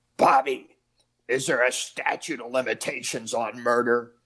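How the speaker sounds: throaty, guttural wiseguy voice. Retelling a question an older mob guy asked: imitating a guttural voice. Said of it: "he had the guttural voice".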